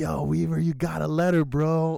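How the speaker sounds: eager, thrilled voice. Retelling announcing to someone that they got a letter: imitating own past excitement. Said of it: "I was all excited for him".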